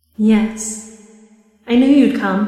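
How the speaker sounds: put-on maternal underwater elf woman voice. Voicing an elf woman who welcomes a player: maternal elf woman voice. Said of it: "and this woman says to you".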